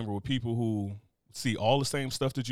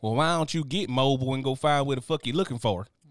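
put-on rural Southern country voice; 2 semitones higher, 4 dB louder than usual. Imitating locals from Mobile, Alabama: put-on country accent. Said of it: "You need to work on that country accent".

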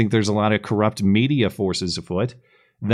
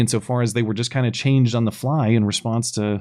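usual speaking voice

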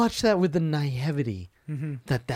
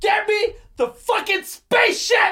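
put-on angry scream, higher and louder; 5 dB louder than usual. Imitating Tom Cruise on the phone to his servants: imitating Tom Cruise screaming. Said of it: "when he's screaming into the phone".

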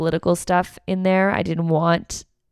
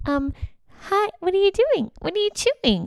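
put-on very high little-kid voice; 14 semitones higher, 4 dB quieter than usual. Speaker recalls how she spoke to someone when she got nervous, put-on child voice. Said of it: "I went into a child voice".

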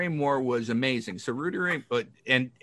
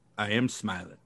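low, soft, dead-flat put-on deadpan, no inflection at all; 4 semitones lower, 5 dB quieter than usual. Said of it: "And completely dead van".

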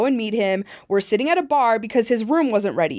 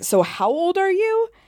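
put-on dismissive, scornful, pitched-up scoffing; 8 semitones higher than usual. Retelling how a man reacted to the speaker's opinion, retelling a scoff. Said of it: "he basically scoffed at me".

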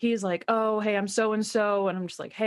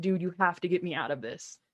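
put-on crying, pleading, lower and quieter; 4 semitones lower, 4 dB quieter than usual. Retelling throwing arms around him at a party, imitating a crying plea. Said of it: "was like crying into his ear".

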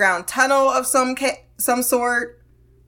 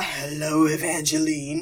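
very deep voice dropped very low; 7 semitones lower, 5 dB quieter than usual. Retelling how a man rose up on a bed and spoke: imitating Lon's deep voice. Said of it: "that deep-ass voice talking about".

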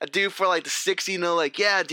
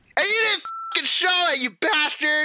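much higher, angry cartoon voice ranting; 9 semitones higher than usual. Berating someone for not showing the film, in a Yosemite Sam rant. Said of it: "he went Yosemite Sam again".

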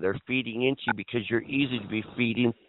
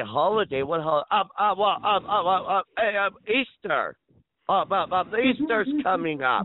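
high, stammering, confused voice. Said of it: "And then they would say".

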